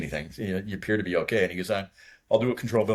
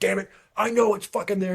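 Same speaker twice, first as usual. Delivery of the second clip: very high, put-on furious ranting, cursing outburst; 12 semitones higher, 3 dB louder than usual. Retelling what the leader said after landing: imitating an angry leader. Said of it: "he was so mad at when we landed".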